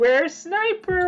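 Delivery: very high, talking-down, patronizing preschool-teacher voice. Mocking a teammate's way of talking: mock preschool-teacher voice. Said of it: "talking like some, like, a preschool teacher".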